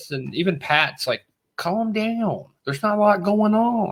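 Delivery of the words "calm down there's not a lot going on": put-on laid-back character voice, higher. Retelling a scene from the show in an impression of Pat. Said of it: "your impression is getting better".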